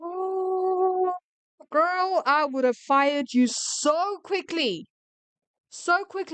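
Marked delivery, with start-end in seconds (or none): 0.0-4.9 loud shouting full of outrage. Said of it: "why I'm shouting".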